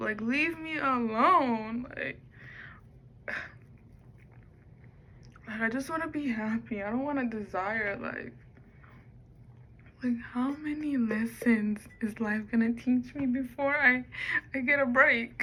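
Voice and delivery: put-on crying voice. Speaker talking to her video audience, fake crying voice. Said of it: "tired of doing this crying voice".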